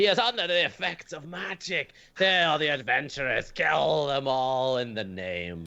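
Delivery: shrill, piercing shriek, very high-pitched. In a tabletop game, voicing what the players hear: shrieking, high-pitched voice. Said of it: "hear a shrieking, high-pitched voice go".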